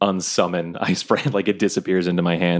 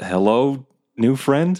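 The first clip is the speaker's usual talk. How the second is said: hesitant, timid, high-pitched, no confidence; 7 semitones higher than usual. Calling out to a badger in its language: unconfident badger speech. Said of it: "With no confidence, Quinny says in badger".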